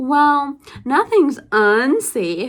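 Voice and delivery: hesitant, unsure tone. Retelling a mechanic's reply to a car question: imitating someone sounding uncertain. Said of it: "with complete uncertainty".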